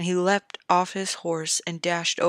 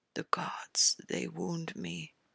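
feeble, faint, weak, quiet voice; 9 dB quieter than usual. A wounded knight, barely opening his eye, answers those asking if he hears, in a weak voice. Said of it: "Jamie said in a weak voice".

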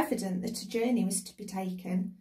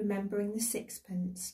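ordinary delivery, nothing marked

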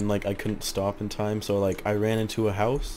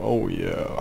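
put-on leering voice, creepy and sinister. Reacting to a friend's voice, demonstrating a creepy voice.

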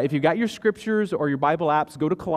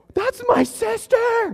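put-on shrill, very high little-kid shriek; 4 dB louder than usual. A parent recounts their child screaming in a store: imitating a child screaming. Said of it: "So screaming in the store".

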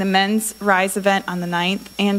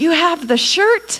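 very high-pitched, all-excited cry; 9 semitones higher, 4 dB louder than usual. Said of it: "he's all excited".

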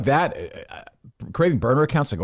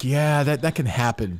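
annoyed, irritated, bothered-sounding tone. Imitating how the woman on the radio sounded: imitating someone sounding annoyed. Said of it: "Why does she sound, like, annoyed by it?".

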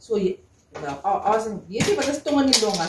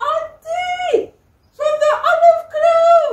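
put-on shout, higher and louder; 8 dB louder than usual. Retelling how a woman on the beach called out: imitating someone shouting. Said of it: "he shouts, he says".

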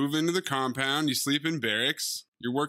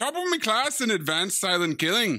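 sudden put-on Scottish accent, pitched up; 5 semitones higher than usual. Retelling a character bragging about his self-defense class, Scottish accent. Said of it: "Why did you become Scottish?".

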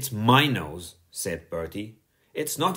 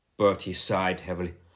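plain reading voice

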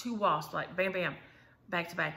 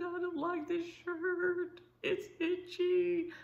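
very high, slow, drawn-out bawling crying whine; 12 semitones higher than usual. Retelling what she said when he found her on the bed, imitating her crying. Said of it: "she's crying".

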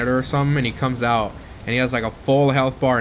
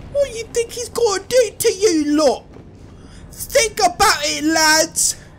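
squeaky, very high, put-on British accent; 3 dB louder than usual. Saying he loves her accent, the speaker mimics it: imitating her British accent. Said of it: "I love her accent".

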